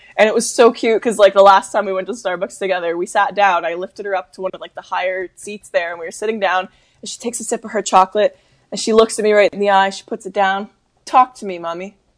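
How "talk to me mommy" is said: tough mafia mob-boss voice. A mother recounts her daughter at Starbucks talking to her; imitating a mob boss. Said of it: "Like she's like a mob boss".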